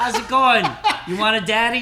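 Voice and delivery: loud, high-pitched, confident, cocky delivery.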